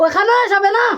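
high, loud calling shout.

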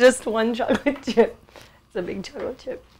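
laughing through the words, cracking up mid-sentence. Fumbling an intro take and cracking up: laughing while talking. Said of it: "I just cracked myself up".

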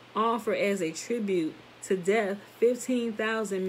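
plain reading voice

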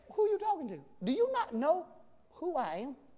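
sassy, cocky, know-it-all smart-aleck tone. Retelling how the angel answers a doubter: smart-aleck retort. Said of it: "He is smart aleck to a certain degree".

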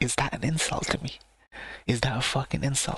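ordinary talk

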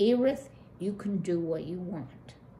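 ordinary delivery

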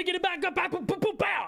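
squeaky, very high cartoon-dude voice. A video creator restarting his intro, sounding like the Wild Thornberries dude. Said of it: "I sound like the dude from the Wild Thornberries".

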